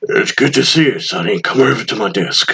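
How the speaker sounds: deep put-on voice. Voicing the lieutenant in a game who greets Sonny: deep voice for the lieutenant. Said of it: "I like him having a deep voice".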